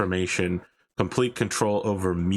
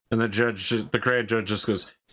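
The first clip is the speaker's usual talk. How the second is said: usual speaking voice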